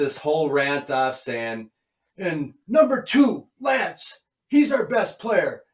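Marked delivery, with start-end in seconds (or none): 2.2-5.5 put-on angry French accent, higher and louder. Retelling a coach's locker-room rant: imitating Jacques's angry French accent. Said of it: "with the French accent and being angry".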